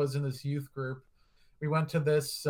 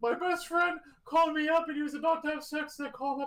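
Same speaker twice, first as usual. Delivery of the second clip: put-on tearful, crying voice, pitched higher; 13 semitones higher than usual. Retelling a former priest's talk at a panel: imitating someone crying. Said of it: "he was, like, crying on".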